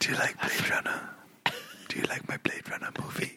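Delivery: very hushed, soft, breathy whisper. Continuing the other speaker's bit as Denis Villeneuve: whispering as Denis Villeneuve. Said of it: "Denny Villeneuve just whispering".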